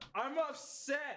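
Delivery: shrill, very high-pitched, all-out yell. A band member, told to say it louder so the whole band hears, shouting.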